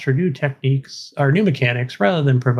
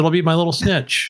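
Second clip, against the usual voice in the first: normal talking voice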